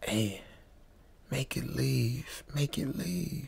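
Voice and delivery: feeble, very hushed, slow, weak murmur. Retelling what a friend said after hours of silence: imitating a weak voice. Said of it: "In a weak voice".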